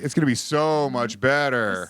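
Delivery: said sarcastically. Speaker showing a show partner how to sound sarcastic, sarcastic tone. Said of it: "with a little more sarcasm to your tone?".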